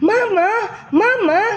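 high cry, each Mama stretched out. Narrator reading Milton Mule bursting into the kitchen: crying out. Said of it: "Cried Milton Mule as he burst into the kitchen".

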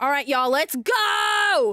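loud, drawn-out yell. Streamer hyping up the viewers as they get going, yelling. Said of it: "Sorry for yelling".

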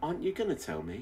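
soft, gentle tone. Narrating a man who has just released a woman, asking her gently. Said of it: "Then he said gently".

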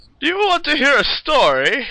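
put-on very high, loud, friendly, chatty old-man voice. Game master voices the old person by the fireplace, in an old person voice. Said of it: "When you get close to the old person by the fireplace".

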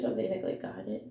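low morning voice. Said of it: "I'm sorry, my morning voice".

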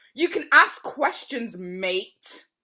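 slow, loud, patronizing condescending tone. Retelling what the other person said: imitating a condescending remark. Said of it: "the most condescending thing I've ever heard".

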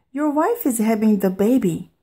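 ordinary delivery, nothing marked

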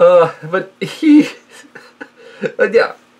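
words slowed and broken by hard laughing. Trying to resume talking after a fit of laughter: laughing while talking. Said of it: "I can't stop myself from laughing".

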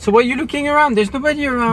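suspicious, accusing, high and loud voice.

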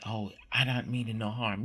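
ordinary delivery

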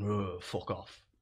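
mock mumble under breath. Retelling a stranger's reply after being refused: imitating a mumble under the breath. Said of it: "mumbled under his breath".

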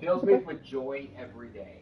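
loud, dry, thick, knowing sarcasm. Answering an interviewer's question about his job, sarcastic. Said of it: "with all sarcasm behind that".

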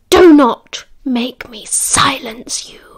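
loud, very slow, drawn-out hissed words. Livia warns her brother Remus, who is behind bars: hissed. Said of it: "she hissed".

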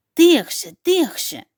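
soft, urgent whisper, barely above breath. Tim speaks to Bul, whispering. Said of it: "прошепотів Тім".

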